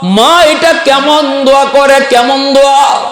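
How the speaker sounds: bewildered, pleading outcry, high pitched.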